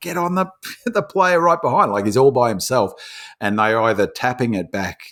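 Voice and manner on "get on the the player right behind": very high, play-acted scream. Retelling yelling at a footy player during a game: imitating own screaming. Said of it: "I was screaming at him".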